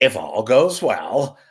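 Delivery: slow radio-host, countdown-show announcer voice like a DJ. Saying he sounded like a countdown host, Casey Kasem voice. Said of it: "[name] doing his best impression of Casey Kasem".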